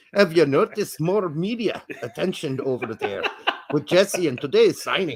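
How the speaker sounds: bad, butchered put-on Irish accent. Reading out a listener's question: bad Irish accent. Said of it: "I butchered your language".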